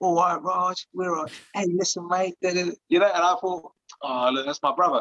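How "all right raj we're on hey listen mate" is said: put-on friendly, matey East London accent. Retelling a phone call out of nowhere, in an east london accent. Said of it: "you get that East London accent".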